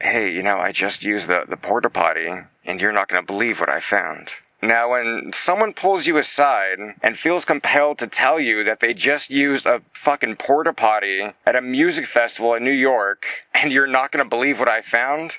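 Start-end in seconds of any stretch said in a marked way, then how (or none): 0.0-4.3 soft whisper, lower pitch. Retelling what a man who pulled you aside before an interview said, in a soft whisper. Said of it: "he whispers softly in my ear and says".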